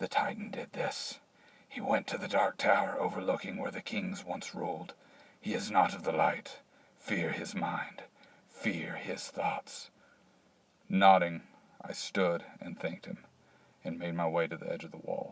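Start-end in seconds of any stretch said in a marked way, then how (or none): 0.0-9.9 hesitant, fearful, halting, soft, broken snake-like voice. Narrator voices a hesitant, frightened vandal stepping forward to speak: broken, snake-like, fearful speech. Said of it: "hesitant and full of fear, stepped forward. His speech was broken and almost snake-like, / His speech was broken and almost snake-like, / His speech was broken and almost snake-like".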